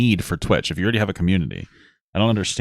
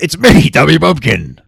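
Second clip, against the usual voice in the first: strained character voice, pushed high pitch, loud; 6 semitones higher, 8 dB louder than usual. Streamer trying out a new character voice: Tubby Bumpkin voice. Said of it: "I can't do that voice for too long".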